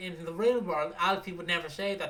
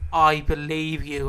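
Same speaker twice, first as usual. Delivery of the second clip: put-on intimidating tone, louder; 2 semitones lower, 9 dB louder than usual. Retelling a phone call where the caller scared him: imitating a caller's scary tone. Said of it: "It's just the way she went".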